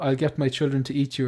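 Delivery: ordinary delivery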